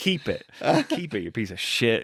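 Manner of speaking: mock angry snapping outburst, swooping pitch. Telling a story, the speaker recounts snapping at someone over a phone: retelling an angry outburst. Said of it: "I just kind of started going off".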